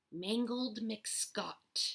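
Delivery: breathed with satisfaction. Left in the darkness, a character tries out a pirate name; breathed with satisfaction. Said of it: "Early breathed with satisfaction".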